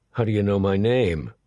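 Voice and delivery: plain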